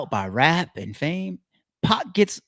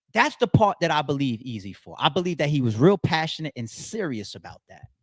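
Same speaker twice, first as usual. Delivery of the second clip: usual speaking voice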